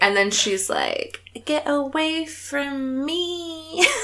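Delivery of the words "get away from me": very high, soft, tiny voice with drawn-out sounds. Telling a game story, the woman rebuffing an advance: bad Bella Goth impression. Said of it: "That's my Bella Goth impression".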